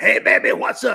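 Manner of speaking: rough, growly voice with a rasp. Retelling a caller's greeting on the phone, in a Wolf Man voice. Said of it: "He sounded like the Wolf Man".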